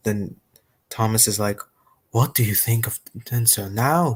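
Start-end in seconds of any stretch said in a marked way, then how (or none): 2.1-4.2 in a whisper. Retelling an episode's ending aloud, reading Thomas's line, whispered. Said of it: "whispered Thomas".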